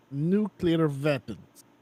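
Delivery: proper put-on Russian accent, both words. Co-host interrupts a news reading to repeat a phrase in a russian accent. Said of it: "we gotta say it in the proper Russian accent".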